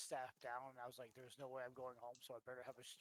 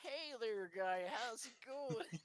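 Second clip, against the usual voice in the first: very high, loud, put-on Wisconsin accent; 9 semitones higher, 5 dB louder than usual. Retelling answering someone who said they looked upset, in a Wisconsin accent. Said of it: "I did my Wisconsin accent today".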